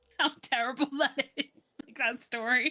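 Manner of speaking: words broken by laughter. Reacting to another speaker's terrible story, laughing while talking. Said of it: "Sorry, I'm just laughing".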